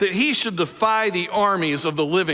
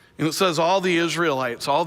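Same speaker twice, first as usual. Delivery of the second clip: usual speaking voice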